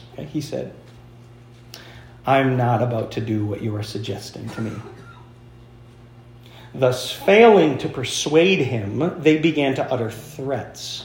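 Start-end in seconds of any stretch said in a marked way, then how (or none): 2.3-4.7 put-on elderly pastor voice, lower and quieter. Retelling Polycarp's answer to those who persisted, as an 86-year-old pastor. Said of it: "you got to hear it in the voice of an 86-year-old pastor".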